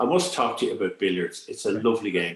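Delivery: ordinary delivery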